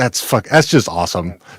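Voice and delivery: ordinary talk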